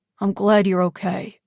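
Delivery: ordinary delivery, nothing marked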